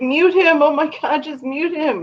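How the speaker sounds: mock, very high, shrill squealing yell. Retelling own reaction to a debate, yelling at the screen. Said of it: "yelling at the screen".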